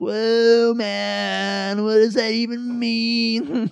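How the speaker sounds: very slow, high, dumb surfer-dude drawl. Retelling how other surfers reacted to being called gnarly, dumb California surfer voice. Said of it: "I hate that I did the voice".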